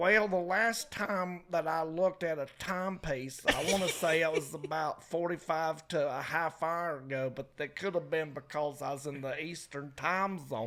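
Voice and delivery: put-on Appalachian Virginia hill accent. Imitating an intern answering what time it is: imitating an appalachian virginia accent. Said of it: "he's got an accent like this".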